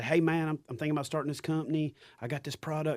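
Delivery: put-on laid-on country accent. Quoting guys who reach out about starting a company, in a redneck voice. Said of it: "Not everybody that starts companies got a redneck voice".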